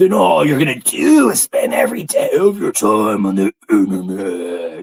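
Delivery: loud, harsh, forceful delivery. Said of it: "That's my Queen Wasp impression".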